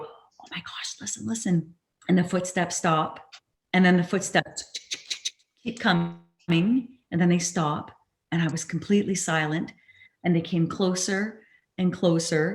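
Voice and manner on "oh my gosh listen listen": low, soft, hushed whisper. Retelling hearing footsteps coming closer at night: imitating own whisper. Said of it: "So I start whispering into the audio".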